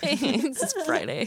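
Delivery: tiny, high-pitched gremlin creature voice. Podcast hosts joking before the intro, one speaks in a little gremlin voice. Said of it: "It's this little gremlin".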